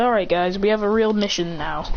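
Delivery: plain reading voice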